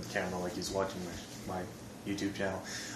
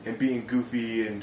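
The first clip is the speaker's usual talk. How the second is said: plain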